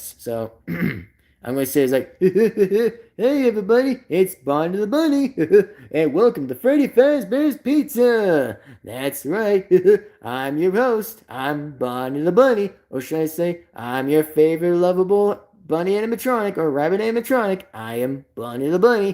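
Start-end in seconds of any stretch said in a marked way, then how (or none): 2.2-19.1 goofy, hammed-up, sing-song delivery. Speaker showing viewers how Bonnie would sound, in a Bonnie the Bunny voice. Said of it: "do another good impression for you guys how Bonnie would sound like".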